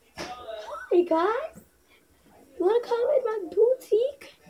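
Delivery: very high-pitched sing-song voice. Introducing Minnie Mouse as a special guest: Minnie Mouse voice. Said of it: "Say hi".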